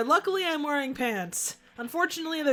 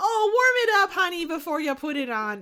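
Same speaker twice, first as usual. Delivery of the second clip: put-on Wisconsin accent held throughout; 4 semitones higher, 3 dB louder than usual. Joking with someone else, stuck in an accent you can't get out of, a put-on Wisconsin accent. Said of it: "Why am I sticking with the Wisconsin accent?".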